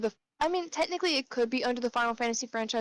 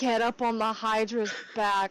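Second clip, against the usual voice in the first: normal talking voice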